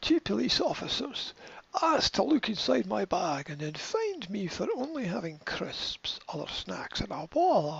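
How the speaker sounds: put-on Scottish accent. Reading out a shopper's quote from a news story, in a Scottish accent. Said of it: "I should do a Scottish accent".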